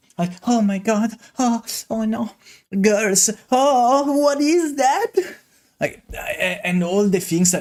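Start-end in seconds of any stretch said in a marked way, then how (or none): 0.5-5.1 high, slow, innocent anime-style voice. Mocking a content creator's innocent anime protagonist act: imitating an innocent anime protagonist voice. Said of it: "the Deku voice meme".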